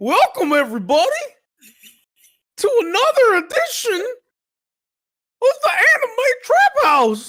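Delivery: very high, loud, swooping cartoon voice. Opening an edition of the Anime Trap House, attempting a Goofy voice. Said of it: "I'm trying to do Goofy".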